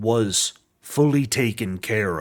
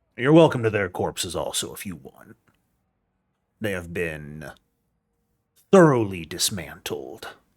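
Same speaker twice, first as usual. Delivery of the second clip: put-on voice in a Texas accent; 2 semitones lower than usual. Roleplaying, the speaker voices Saltpeter in his Texas accent. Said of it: "Saltpeter's been using this voice for a hot minute".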